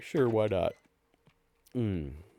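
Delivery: talking through a yawn. Answering a question in conversation, then apologizing; yawning while talking. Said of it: "sorry for the yawning".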